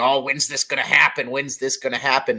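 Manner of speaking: fast, derisive, mocking put-on whine. Speaker quoting what a lot of people were saying, in a mocking voice. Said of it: "That's my best mocking voice right there".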